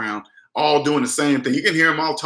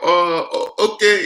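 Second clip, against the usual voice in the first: put-on Indian accent; 4 semitones higher than usual. Retelling a phone call, voicing the callers' reply: put-on Indian accent. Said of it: "you hear that Indian voice".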